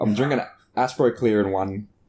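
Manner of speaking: ordinary talk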